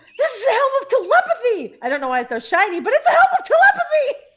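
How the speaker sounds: thrilled, gushing, high and swooping excited voice. Voicing an adventurer holding up a new magic helm: excited character voice. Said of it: "she just looks at him and goes".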